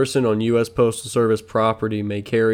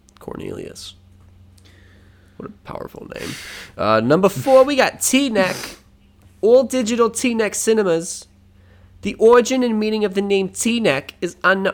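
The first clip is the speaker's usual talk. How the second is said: put-on New Jersey accent; 11 semitones higher than usual. Reading out a ranked list of New Jersey towns, Real Housewife from New Jersey accent. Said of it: "I'm reading this like a Real Housewife from New Jersey".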